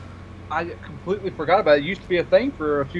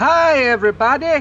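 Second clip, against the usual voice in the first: loud, pitched-up, "hi" belted out up high; 8 semitones higher, 7 dB louder than usual. Opening the show with a greeting, answered as if doing Doctor Nick. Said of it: "Hi, Doctor Nick".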